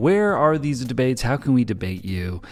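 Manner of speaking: normal talking voice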